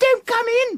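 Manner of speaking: very high-pitched, jittery, nervous squeak. Retelling what someone inside the locked bathroom squeaked out: imitating a high-pitched nervous squeak. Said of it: "squeaked out".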